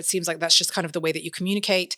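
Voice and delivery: normal talking voice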